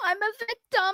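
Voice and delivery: soft fake crying, put-on victim voice. Mocking someone over there, the speaker imitates Becky fake crying. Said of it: "Becky over there fake crying".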